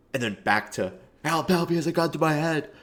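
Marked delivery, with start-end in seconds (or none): 1.2-2.6 desperate, high, frantic screaming. Retelling how FouseyTube pauses mid-scream: imitating FouseyTube calmly asking. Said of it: "screaming that there's a gun to your head".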